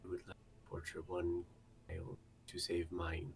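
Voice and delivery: very quiet, soft-spoken aside under the breath. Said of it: "I will very quietly over the thing say".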